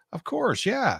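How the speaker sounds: high, sudden dawning realization. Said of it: "And then it's like".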